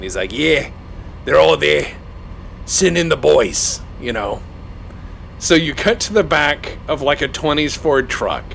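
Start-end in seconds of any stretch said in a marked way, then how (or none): 0.3-3.8 put-on thick, heavy, laid-on Massachusetts accent. Describing a 1927 Innsmouth scene, the guy in the phone booth, heavy Massachusetts accent. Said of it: "heavy, heavy accent. Like, you know, Massachusetts accent".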